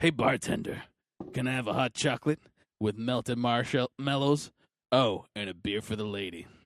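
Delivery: put-on tough voice. Retelling walking up to a bar and ordering, in a put-on tough voice. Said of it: "with my tough voice".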